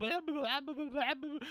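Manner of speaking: mock tough guy, high-pitched blah-blah rant. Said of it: "The guy's just like".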